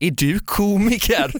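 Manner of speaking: high, condescending, belittling, feigned surprise. Quoting a woman's reaction on learning he is a comedian: mock-condescending question. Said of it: "det var sån jävla härskarteknik".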